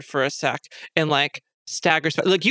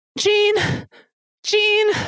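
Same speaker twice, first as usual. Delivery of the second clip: very high-pitched, smothered, muffled calling out; 4 dB louder than usual. Narrating a game scene as someone barely hangs on, muffled voice. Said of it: "you just hear like a muffled like".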